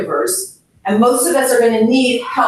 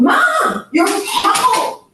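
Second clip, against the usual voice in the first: voice raised, talking faster, very high-pitched; 11 semitones higher than usual. Showing the wrong way to answer a mother who wants to go home; raised voice, talking faster. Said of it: "talking faster and shaking".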